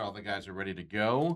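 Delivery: ordinary delivery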